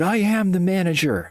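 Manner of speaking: put-on irritated, angry retort, very high, drawn out. Quoting the man who had screamed at the speaker, imitating an angry man. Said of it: "He was pissed".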